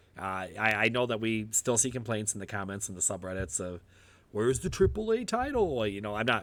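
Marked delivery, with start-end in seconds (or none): 4.3-5.8 goofy put-on voice, much higher. Quoting commenters' complaints in a goofy voice. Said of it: "I put on my goofy voice".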